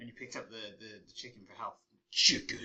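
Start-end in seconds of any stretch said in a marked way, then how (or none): 2.1-2.7 booming, very loud arcade game announcer shout. Remembering a game where picking up chicken gave health: imitating game voice. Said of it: "It said chicken like that".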